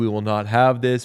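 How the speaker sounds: ordinary talk, nothing marked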